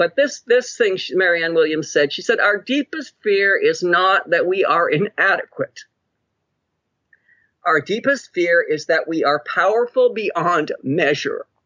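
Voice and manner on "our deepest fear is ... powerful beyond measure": choked-up voice catching with emotion. Quoting an encouraging passage for people starting out, choked up. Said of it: "it always chokes me up. I'm sorry".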